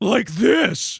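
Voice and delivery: put-on growly character voice. Showing the growly voice once tried for Takemaru: Nekomaru voice. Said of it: "the Nekomaru voice".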